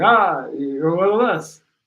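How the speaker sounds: slow, groaning walking-dead zombie voice. Retelling how people out at night answered back, zombie groan voice. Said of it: "like a walking zombie at night".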